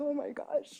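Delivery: high, soft, mock panicked scared kids voice.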